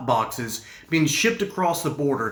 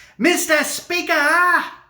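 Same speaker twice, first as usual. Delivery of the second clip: very high, squeaky, shrill, loud put-on voice; 12 semitones higher, 5 dB louder than usual. Imitating how a sickly man's adult voice sounded: high-pitched put-on voice. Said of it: "his voice sounded like this: ... he had a high pitched voice".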